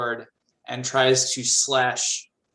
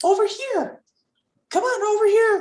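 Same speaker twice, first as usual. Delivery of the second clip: tiny, very high little voice; 4 dB louder than usual. Voicing a tiny figure calling the players over: small voice. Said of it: "you hear a small voice".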